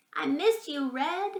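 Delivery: tiny, high, slow, very small voice. A tiny creature poking out of its hollow tells Red, in a tiny voice. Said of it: "in a voice so small".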